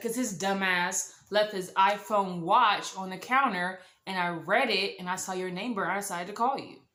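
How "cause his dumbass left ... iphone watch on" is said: ordinary delivery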